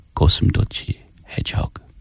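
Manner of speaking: hushed, breathy, secretive whisper. Whispering a secret answer into the mic so she can't hear: whispering. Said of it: "I'm gonna whisper it into the mic".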